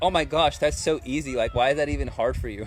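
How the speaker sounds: normal talking voice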